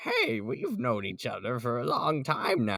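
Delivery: put-on old man character voice. Speaker demonstrates the voice they gave a character in their project; put-on voice for the old guy. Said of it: "we gave him that voice".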